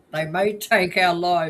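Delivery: loud, rousing, stirring battle cry.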